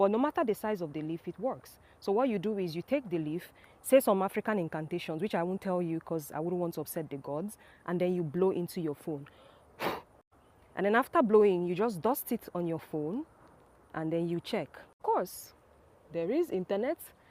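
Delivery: ordinary delivery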